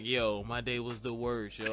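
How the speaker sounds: put-on tough thug voice, casual dude manner. Retelling what a co-host said about her day, thug voice. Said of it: "I got, like, the man voice".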